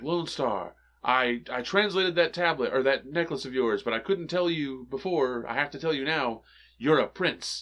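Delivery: normal talking voice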